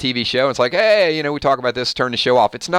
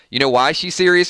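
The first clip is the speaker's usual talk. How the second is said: usual speaking voice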